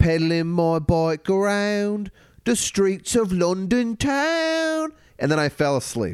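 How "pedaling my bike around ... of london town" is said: very bad put-on British accent, high, slow, "town" drawn out. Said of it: "Worst British accent I've ever heard".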